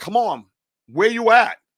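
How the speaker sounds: play-acted loud, high yelling call. Retelling calling out into the woods from the fence: retelling own yell into the woods. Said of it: "And I'm yelling out to the woods".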